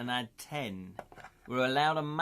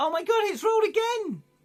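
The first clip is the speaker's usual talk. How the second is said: voice shooting very high, swooping, shrill and excited; 6 dB louder than usual. Playing a tabletop game, the player reacts to a dice roll with voice going really high. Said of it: "my my voice went really high".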